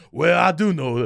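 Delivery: fake Southern charm accent. Describing people from Charleston with Southern charm: imitating a Southern charm accent. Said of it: "that charm".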